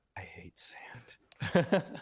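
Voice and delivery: slow, whispered delivery. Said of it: "Anakin wasn't wrong with that take".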